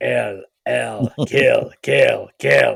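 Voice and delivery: creepy, eerie little robot voice. Describing the dead spelling out a message through a board game, creepy little robot voice. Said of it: "it's very creepy in that little robot voice".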